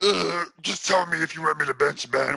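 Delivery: grimy voice, like chewing rocks. Quoting what the listener told a reporter, in a grimy voice, chewing rocks. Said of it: "with your grimy ass voice, chewing rocks".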